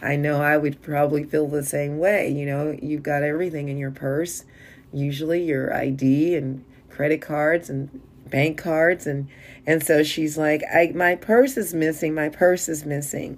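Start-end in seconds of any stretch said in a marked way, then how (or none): none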